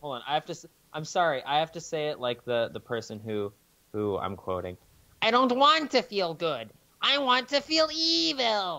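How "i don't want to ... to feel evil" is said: very high, swooping, slow, stretched-out evil villain voice. Redoing the same line like the quoted character: Skeletor voice. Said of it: "I'm not a very good Skeletor".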